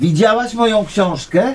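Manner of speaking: very high, shrill, loud shout. A man repeats his unanswered question to a woman, shouting. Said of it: "Nie krzycz, proszę".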